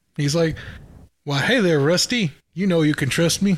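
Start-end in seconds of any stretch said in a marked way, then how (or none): 1.3-3.6 put-on Texan accent. Asked how he says trust me, the speaker acts him out in a texan accent. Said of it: "Why is he Texan?".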